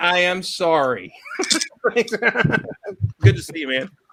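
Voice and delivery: very slow speech with laughter bubbling through. Apologizing and saying goodbye to a departing friend, giggling while talking. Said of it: "Why are you still giggling if you're sorry?".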